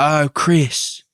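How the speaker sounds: put-on British accent. Joking that Family Guy was first a British cartoon: British Family Guy voice. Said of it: "the original Family Guy was like".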